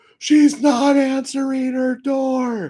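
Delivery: very high, very slow yell, "door" stretched out. Retelling a woman calling out after banging on an apartment door, retelling a yell. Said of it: "start yelling back and forth".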